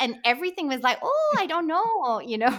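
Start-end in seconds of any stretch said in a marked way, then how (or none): 1.0-2.6 put-on small-town Minnesota accent, high and sing-song. Recalling an audition tape for a lead role, in a Fargo-style Minnesota accent. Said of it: "doing a Minnesota accent like Fargo".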